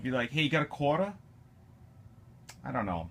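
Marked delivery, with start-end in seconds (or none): 0.3-1.1 put-on South Boston accent, quieter. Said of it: "some Southie accent".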